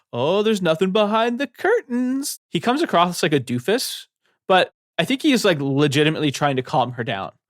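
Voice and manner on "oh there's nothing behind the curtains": high, patronizing, condescending reassuring tone. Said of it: "patronizingly being like".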